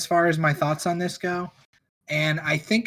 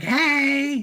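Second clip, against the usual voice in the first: long exclamation with a high, stretched-out hey; 9 semitones higher than usual. Showing which one Rip Taylor is: Rip Taylor impression. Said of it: "Rip Taylor the one that's like".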